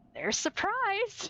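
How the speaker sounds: let-down dad voice. Retelling how the dm answered a reckless plan: imitating disappointed dad voice. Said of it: "disappointed dad voice".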